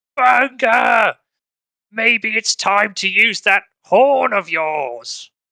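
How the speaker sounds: loud yelling, projected upward. Voicing a character calling up to an ally during a fight: yelling up at someone. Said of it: "he yells up at Bungerson".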